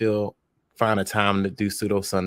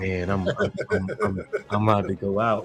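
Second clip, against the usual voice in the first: drowsy, sleepy voice, stumbling and tripping over words. Imitating a departing guest's voice: imitating Vanta's sleepy voice. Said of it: "Vanta got that "I'm sleepy" voice".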